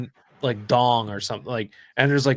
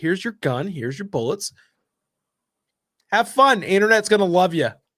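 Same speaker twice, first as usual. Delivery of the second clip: put-on sarcastic, cheerful-sounding tone, raised pitch; 7 semitones higher, 4 dB louder than usual. Acting out a mock shooting-people checklist, put-on sarcastic tone. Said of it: "This is sarcasm".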